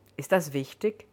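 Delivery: ordinary delivery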